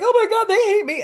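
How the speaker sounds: very high, loud, tearful crying wail. Retelling past words to mom about clients, imitating own past crying. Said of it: "I used to cry to my mom".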